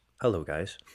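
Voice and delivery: utterly bland, flat, flavorless delivery. Imitating Casimir Kaskisuo filming a day-in-the-life video: bland voice. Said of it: "Just the most bland voice".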